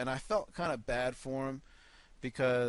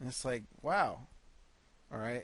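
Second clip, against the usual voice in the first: normal talking voice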